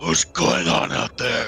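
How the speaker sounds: deep, very low, gruff growl. Game master voicing a prisoner calling from a corner cell: very low, gruff voice. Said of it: "you hear a very low, gruff voice".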